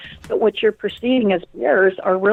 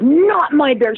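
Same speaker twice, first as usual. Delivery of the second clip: cranky, feisty, grumpy, pitched up; 6 semitones higher, 4 dB louder than usual. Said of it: "She's really grumpy and real, real feisty".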